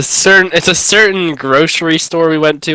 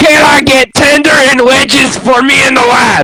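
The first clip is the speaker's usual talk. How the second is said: acted-out scream, higher pitch; 7 semitones higher, 5 dB louder than usual. You act out how your brother in Christ looked them in the eyes and ordered, retelling a scream. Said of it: "looks them in the eyes and screams".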